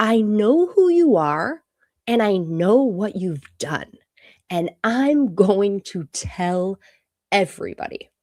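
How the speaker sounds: slow, deliberate, furious and angry. Retelling what an angry man said up close: imitating an angry man. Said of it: "And he gets really mad".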